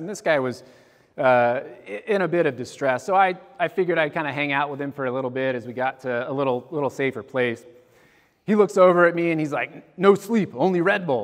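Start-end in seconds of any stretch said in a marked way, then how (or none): 10.0-11.3 put-on Bulgarian-accented speech. A guy in distress looks over and answers the person keeping him company, in a thick Bulgarian accent. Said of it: "in this kind of thick Bulgarian accent".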